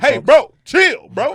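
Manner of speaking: booming, very loud, drawn-out yell at full volume. Retelling cutting someone off with a yell: retelling own loud yell. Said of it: "I yelled so loud".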